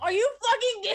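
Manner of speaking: loud, high frustrated outburst. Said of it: "why I'm so frustrated".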